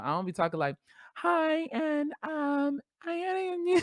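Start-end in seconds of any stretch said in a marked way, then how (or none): 1.2-3.8 put-on feminine voice, higher and quieter. Showing how they do not talk: attempting a girl voice. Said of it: "I don't even know how to do a girl voice".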